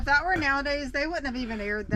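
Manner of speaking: ordinary talk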